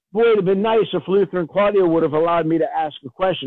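ordinary delivery

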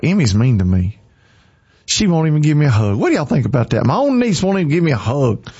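swooping, playful, teasing voice, all in fun. Talking to y'all about your niece, teasing. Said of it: "I'm just teasing".

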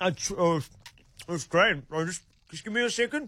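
talking with mouth full. Playing a diner asked by a manager how the food is: talking with mouth full. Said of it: "Your mouth's full of food".

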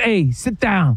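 put-on Jersey mobster-type gangster voice. Retelling a man at a jersey table pulling him in, imitating a jersey mobster-type guy. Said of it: "everyone thinks they're gangster Sopranos guys".

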